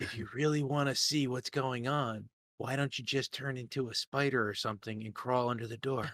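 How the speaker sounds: secretive, hushed, very soft half-whisper. A player half-whispers so another player can't hear through the door, half-whispering. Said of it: "I'm gonna whisper so that Sora can't hear".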